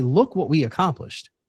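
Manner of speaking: plain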